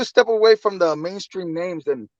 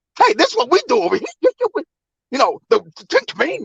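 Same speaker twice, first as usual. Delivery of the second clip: put-on high, sing-song, pushy voice; 8 semitones higher than usual. Imitating someone who keeps cutting others off: mocking imitation of someone interrupting. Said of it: "Can't let nobody get their point across".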